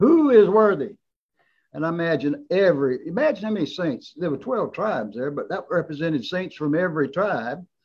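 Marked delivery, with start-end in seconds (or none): 0.0-1.0 strong, loud, high, booming, proclaiming angel voice. Retelling scripture, the speaker voices an angel's proclamation in a loud, strong voice. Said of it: "angel with that loud, strong voice says".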